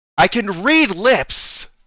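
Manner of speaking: light, called out as if across a room. Narrating a game to a player, the speaker voices Melina shouting with a smile. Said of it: "gives you like a smile and shouts".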